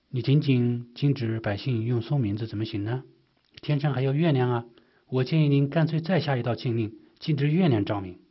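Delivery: ordinary talk, nothing marked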